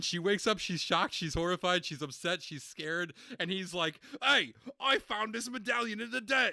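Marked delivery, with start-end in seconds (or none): 4.2-6.5 mock suddenly eager, fired-up, pitched-up exclamation. Recounting a scene from a story, imitating a character acting fired up. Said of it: "he's immediately like fired up again".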